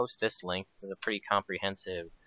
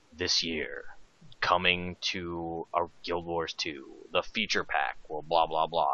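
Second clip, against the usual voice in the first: put-on movie-trailer narrator voice, slower and quieter; 3 semitones lower, 4 dB quieter than usual. Retelling how he answered a chat request on stream: movie narrator impersonation. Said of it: "Can you do your best uh, movie narrator impersonation?".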